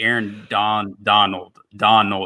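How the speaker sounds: strained pronunciation of a word in Southern drawl. Struggling to pronounce a player's name aloud, southern drawl. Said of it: "Is that your southern drawl?".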